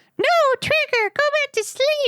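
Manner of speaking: very high, tiny, squeaky, pleading mouse voice. Narrating Evan as a big head pops up in front of him: pleading in little mouse voice. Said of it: "Evan pleaded in his little mouse voice".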